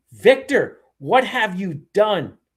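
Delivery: angry, hurt, really mad and upset voice. Retelling a character's line from a trailer: imitating someone mad and upset. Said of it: "really mad and upset".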